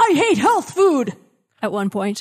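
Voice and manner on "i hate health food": mock, very high-pitched yelled outburst. Retelling how a comic character yells a line: imitating a yell. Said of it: "he just yells".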